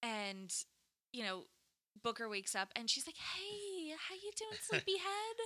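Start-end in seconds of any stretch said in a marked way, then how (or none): 3.2-5.4 put-on very high, light, cooing girlish voice. Retelling a scene where a tied-up character greets someone waking up, lighter girlish voice. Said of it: "like a girl's".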